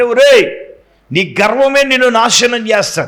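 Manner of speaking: normal talking voice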